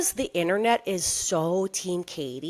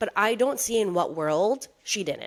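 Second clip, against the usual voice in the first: ordinary talk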